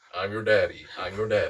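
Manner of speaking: low, robotic machine voice. Retelling what the training dummy says, robot voice. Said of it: "in the most robot voice".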